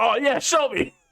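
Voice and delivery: way high, loose, laid-back, chill surfer dude. Imagining how Jake the dog would answer the opponent, in Jake the dog voice. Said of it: "I think he'd be like".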